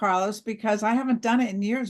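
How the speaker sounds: ordinary talk, nothing marked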